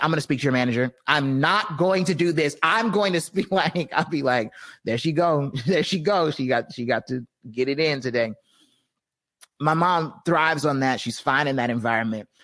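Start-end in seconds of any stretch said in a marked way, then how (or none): 0.0-2.6 escalating, fired-up, heated tone. Describing her mom with bill collectors, the speaker imitates her going up a level. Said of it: "go up a level and be like".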